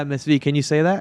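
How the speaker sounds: normal talking voice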